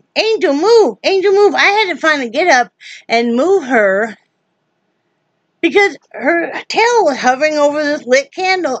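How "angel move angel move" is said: mock, pitched-up, shouted yell. Retelling telling the cat to move off a lit candle: imitating own yelling. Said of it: "yelling at her".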